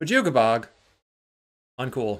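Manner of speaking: very loud, sudden outburst shout. Commentating a card game, the speaker reacts to a play, yelling. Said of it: "Sorry for yelling".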